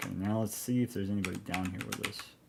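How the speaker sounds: usual speaking voice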